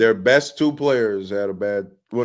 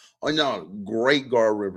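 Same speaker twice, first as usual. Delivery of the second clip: sarcastic, ironic, mock-sincere tone. Retelling own usual reply when someone brings up a defense: imitating own sarcastic remark. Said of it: "I say a sarcastic".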